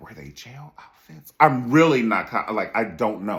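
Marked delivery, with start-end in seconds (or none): 0.0-1.3 hushed, breathy whisper under the breath. Speaker retells asking a question while not wanting to offend anyone, retelling a whisper. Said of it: "I'm whispering and shit".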